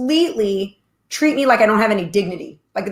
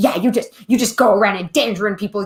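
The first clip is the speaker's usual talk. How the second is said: put-on hateful, mocking voice. Retelling what a stranger in a grocery store snapped back, imitating a hateful man. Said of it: "He had hatred in his voice".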